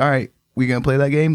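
ordinary talk

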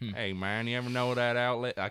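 not-so-good put-on cowboy voice. Demonstrating a quick switch between accents, cowboy voice. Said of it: "you don't do a good cowboy voice?".

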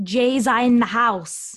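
loud, put-on New York street accent. Joking around with co-hosts, attempted New York accent. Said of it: "I'm trying to do a New York accent".

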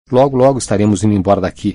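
ordinary delivery, nothing marked

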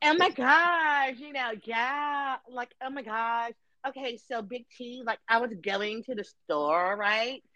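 put-on valley girl voice.

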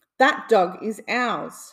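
loud, slow, drawn-out cartoon duck squawk. Narrator reads Donald's line to the judge: Donald's squawk. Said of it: "he squawked".

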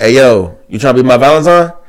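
loud street slang style.

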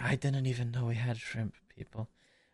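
hushed half-whispered aside to himself. Voicing a character muttering to himself about shrimp people: half-whispering to himself. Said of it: "he kind of whispers to himself like".

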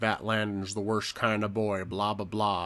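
acted American southern voice. Retelling what the preacher father says about landon: imitating a southern accent. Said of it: "the only person in the entire movie that has a Southern accent".

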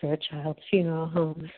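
hushed, very half-whispered voice. Retelling a call to a funeral home: imitating a half-whispery phone greeting. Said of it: "a guy answered the phone in a very whispery tone".

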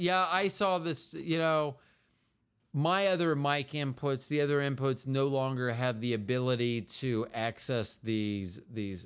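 ordinary talk

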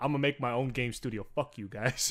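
ordinary talk, nothing marked

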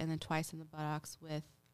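ordinary talk, nothing marked

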